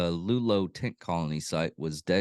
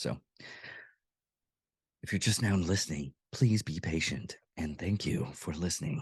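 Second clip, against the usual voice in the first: hushed, whispery, breathy, sultry, seductive radio-host voice; 5 dB quieter than usual. Podcast host thanking new listeners for their patience, seductive radio voice. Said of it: "my seductive radio voice".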